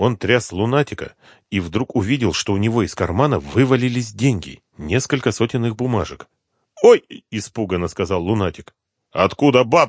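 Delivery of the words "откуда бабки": stern, strict, severe. Seeing money fall from the sleepwalker's pocket, a man asks sternly. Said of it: "строго спросил Коклюшный".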